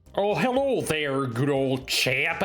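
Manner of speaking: put-on British accent. Voicing a character's lines in a surgery game, in a british accent. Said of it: "I'm total British right here".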